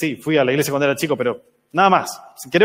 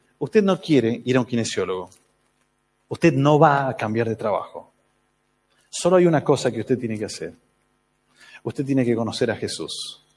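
play-acted solemn, grave, dead-serious voice; 4 semitones lower, 4 dB quieter than usual. Recounting what the speaker once told a man, retelling a put-on serious voice. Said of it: "con mi mejor voz seria".

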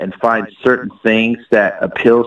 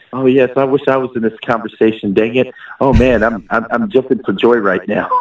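usual speaking voice

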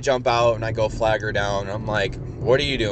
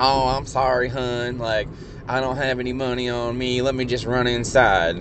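really bad, clumsy put-on Southern accent; 2 semitones higher than usual. Retelling what a woman said to them, in a really bad southern accent. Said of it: "she's got a really bad southern accent".

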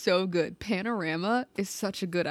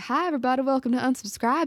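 pitched-up put-on Southern country twang, host style; 5 semitones higher, 3 dB louder than usual. Joking about a future show intro with banjo music: put-on country voice. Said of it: "if by this time next year my theme music is banjo music and I'm like".

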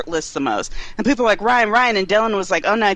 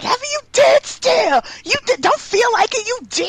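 put-on very high, thrilled, excited shriek. Recounting their reaction when someone said something, retelling a scream. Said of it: "I screamed like".

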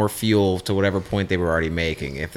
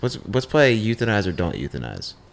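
plain

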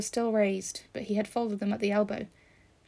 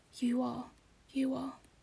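whispered, much quieter; 3 semitones higher, 6 dB quieter than usual. Narrator reads a boy repeating his reply to the narrator, whispered. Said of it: "he whispered to me".

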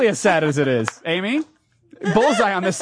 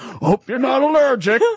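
put-on somewhat high old man voice; 5 semitones higher than usual. Imitating Arky handing over a potion: Arky voice, old man. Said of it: "the cat barbarian that sounds like an old man".

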